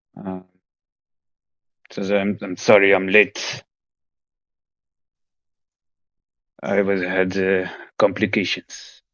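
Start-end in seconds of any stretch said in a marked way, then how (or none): 2.2-9.0 very hoarse, raspy, croaking voice. Narrating a scene, the late captain apologizes as he sits down, in Marek's very hoarse voice. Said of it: "with a very hoarse voice that you know is typical for him".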